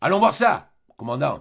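thunderous, booming, declaiming voice. Shouldering his rifle, a man turns to the commandant in a thunderous voice. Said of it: "il lui dit d'une voix de tonnerre".

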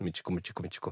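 мичику repeated rapid-fire, back to back in a row. Showing how a word must be said: quick rapid repetition. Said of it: "И быстро нужно это сказать".

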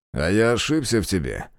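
ordinary delivery, nothing marked

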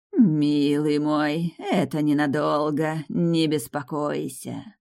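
hissing. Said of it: "прошипела Сафира".

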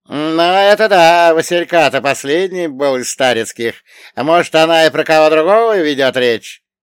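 very loud, cheeky, brazen insolent tone. A man answers a companion's doubt about a letter with an insolent smirk. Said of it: "нагло ухмыльнулся Гришка".

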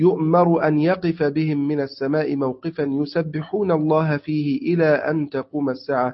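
ordinary talk

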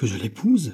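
sudden, cried-out exclaiming outburst. Urged by the other man to marry her in his place, he cries out. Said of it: "s'écria l'autre".

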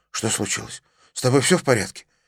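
frightened, fearful voice. A son opens the door and asks his father, frightened question. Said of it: "испуганно спросил отца".

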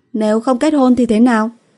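trembling, shaky, high quavering voice. After a long stillness she sits down on the sofa and answers him, trembling voice. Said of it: "run run nói".

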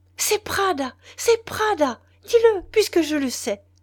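high, loud, dreadful, terrible outcry. A woman hears a stammered answer and cries out, terrible cry. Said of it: "elle eut un cri terrible".

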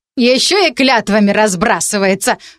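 snorting, hmph sound. A woman serving borscht answers a magician's vow of thanks, with a snort. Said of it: "хмыкнула Краснолиха".

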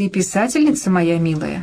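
plain reading voice

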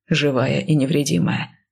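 ordinary delivery

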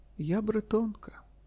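tender, mild, gentle voice, pitched a little up. Narrator reads the wife answering her husband's question: gently. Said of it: "лагідно відповіла вона".

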